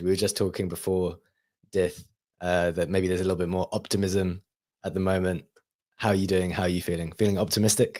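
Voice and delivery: fast, raspy, hoarse, sick-sounding voice. Sick show host greeting his guest: hoarse voice. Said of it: "Am I getting you down with the hoarse voice?".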